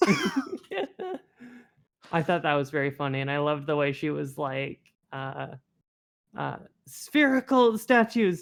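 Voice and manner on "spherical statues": loud yelling. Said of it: "yelling about all the different kinds of statues".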